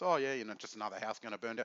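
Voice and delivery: offhand, dry, mocking, sarcastic tone. Retelling own words to the regulator: retelling own sarcastic remark. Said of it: "sarcastic way".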